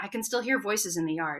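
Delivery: ordinary delivery, nothing marked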